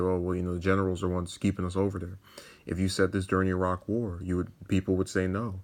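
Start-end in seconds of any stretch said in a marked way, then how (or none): none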